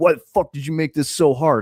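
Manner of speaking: mock pushy, aggressive, ranting bodybuilder-type voice. Retelling how a big guy came up to him: mock-aggressive. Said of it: "he came up to me like relatively aggressively".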